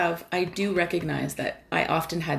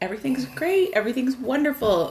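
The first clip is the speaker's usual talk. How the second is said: forced, fake cheerful gushing brightness, pitched up; 8 semitones higher than usual. Recalling how they used to act, imitating fake happiness. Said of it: "pretending happy".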